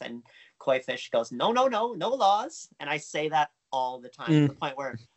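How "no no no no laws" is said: put-on very thick Swedish accent, very slow, high-pitched. Acting out a man's answer about a law limiting the king, use a very thick Swedish accent. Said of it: "has a very thick Swedish accent".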